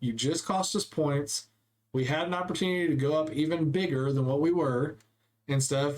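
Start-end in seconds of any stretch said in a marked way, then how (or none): none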